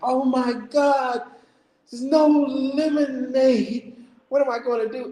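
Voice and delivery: breaking out into sobbing while speaking. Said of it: "busting out crying".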